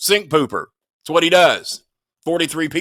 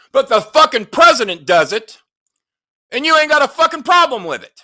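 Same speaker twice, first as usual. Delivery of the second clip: furious shouting, loud and high-pitched; 9 semitones higher, 5 dB louder than usual. Ranting to listeners about QAnon people, admitting to being mad, yelling angrily. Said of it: "I know I'm yelling because I'm mad".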